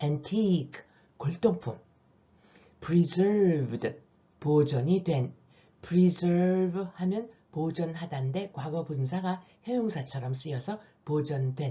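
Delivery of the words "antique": antique with stress on second syllable -tique. Going through english vocabulary words: stress on 'tique' in antique. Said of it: "강세가 뒤에 있어요".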